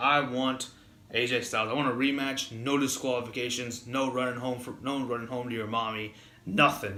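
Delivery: ordinary delivery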